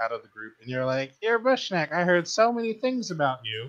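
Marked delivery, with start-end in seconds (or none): 1.2-3.7 high, teasing put-on voice. Retelling how a friend first approached, imitating the friend's voice. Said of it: "I'm not trying to mock your voice".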